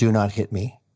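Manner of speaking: plain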